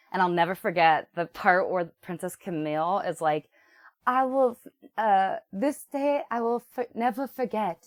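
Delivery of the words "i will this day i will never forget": awful fake British accent, much higher. Recalling a scene remembered from childhood, Princess Camille's awful British accent. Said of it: "her accent in that moment is so awful".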